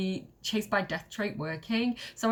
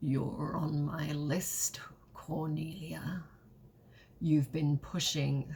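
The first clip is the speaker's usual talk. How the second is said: sexy, low, thick, phlegmy cat voice; 6 semitones lower, 4 dB quieter than usual. Narrator voices a cat speaking to cornelia, in a sexy, thick, phlegmy cat voice. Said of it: "sexy, thick, phlegmy, smelly cat voice".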